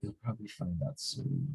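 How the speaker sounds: soft, half-whispered voice. Voicing a character who answers the doctor quietly: half-whispering. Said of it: "Chambers whispers".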